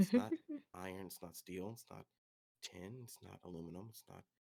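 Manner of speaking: mumbling, muttering under breath. Voicing a character in the game who is mumbling to himself. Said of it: "he's mumbling to himself".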